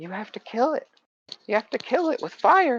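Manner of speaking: put-on very high ghost-boy half-whisper. Voicing a spectral boy who urges the detective: half-whispering ghost boy. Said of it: "he whispers to you".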